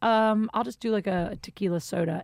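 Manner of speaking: plain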